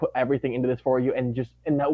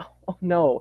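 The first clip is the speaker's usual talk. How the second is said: mock heartbroken voice, higher; 4 semitones higher than usual. Retelling Elsa's reaction to the news: imitating heartbroken Elsa. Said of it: "she's so heartbroken".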